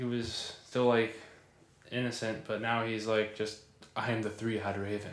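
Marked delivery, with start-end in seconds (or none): 4.0-5.1 mock flat, emotionless monotone, quieter. Imitating a character who has become strange: imitating a monotone voice. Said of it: "so monotone and just".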